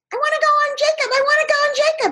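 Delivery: very high, squeaky talking-shoe character voice. A parent dances a shoe in the air, talking to the child: squeaky shoe voice. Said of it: "you might make a squeaky voice".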